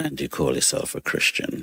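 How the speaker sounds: muttered under the breath. Retelling a remark someone made during unloading: imitating a mutter under the breath. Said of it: "he says under his breath".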